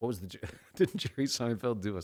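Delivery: words spoken through laughter. Trying to recall a riff someone did, laughing while talking. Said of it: "Sorry, I'm laughing about this".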